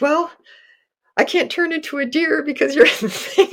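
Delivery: flustered, embarrassed, high-pitched, caught-off-guard delivery. Retelling what she said back when they were together, acting embarrassed and flustered. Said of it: "she's got like super embarrassed and flustered".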